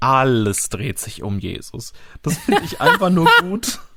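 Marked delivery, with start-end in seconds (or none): 0.0-1.9 stretched-out, lingering words with slow emphasis. Copying how another man stresses and stretches the line, drawn-out slow delivery. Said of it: "auch wie er das betont, weil er das ja auch so lang zieht".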